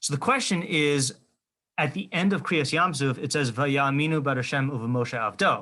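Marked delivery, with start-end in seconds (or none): none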